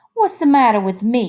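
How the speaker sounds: heated outburst of anger, angry cry. Narrator reading a woman's line to Lenny, angry crying out. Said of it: "she cried".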